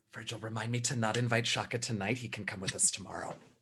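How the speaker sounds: hushed, very quiet half-whisper. Speaking in character where another character can still hear: half-whispering. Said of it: "attempting to whisper".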